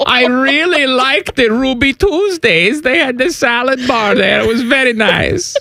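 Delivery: very high-pitched put-on German accent. Performing a quote, the speaker goes on in a German accent. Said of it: "Your German accent".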